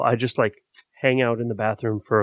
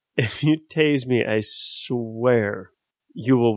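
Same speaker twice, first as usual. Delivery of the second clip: ordinary delivery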